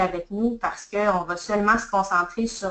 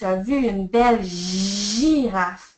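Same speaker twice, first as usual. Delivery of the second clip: heavy stress placed on the word "girafe"; 3 dB louder than usual. Repeating a child's sentence back with the correction, stress on girafe. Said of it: "j'ai accentué la correction apportée dans la phrase".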